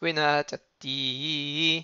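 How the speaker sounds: na slowed and eased off, heavy stress on final ti. Teaching Hebrew reading in French, put stress on the final ti of ונתתי. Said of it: "on ralentit un tout petit peu sur le na et on s'écrase sur le ti final".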